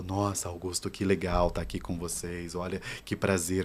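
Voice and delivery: voice sitting low in the throat, throaty resonance. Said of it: "com essa voz toda na minha garganta".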